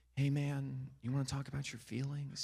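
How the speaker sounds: sugary-sweet, really nice voice. Imitating a crisis negotiator talking to a suspect: imitating someone talking really nice. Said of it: "to talk really nice to him".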